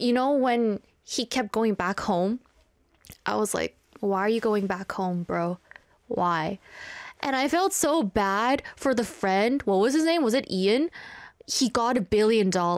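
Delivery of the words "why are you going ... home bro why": normal talking voice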